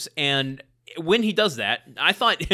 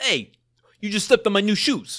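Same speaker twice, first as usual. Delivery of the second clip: put-on New Jersey bully tough-guy accent; 6 semitones higher than usual. Joking about how bullies in films sound, the speaker demonstrates a jersey bully accent. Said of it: "Why do all bullies sound like they're from Jersey?".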